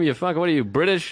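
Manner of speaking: ordinary talk, nothing marked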